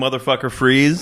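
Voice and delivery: normal talking voice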